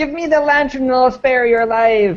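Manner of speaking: high-pitched, squeaky pixie yell. Game master voicing a tiny pixie-like creature sneaking up on a player: high-pitched squeaky yell. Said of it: "high-pitched, squeaky voice yell".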